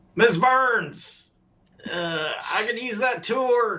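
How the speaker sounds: calling out loudly. A player character, too far away to reach her in time, shouting to be heard. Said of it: "I will shout".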